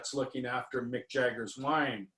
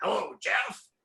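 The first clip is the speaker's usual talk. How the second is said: rough, very gruff voice, pitched up; 8 semitones higher than usual. Retelling a phone call as the caller greets the speaker: Marty Lickman's gruff voice. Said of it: "in a very gruff voice".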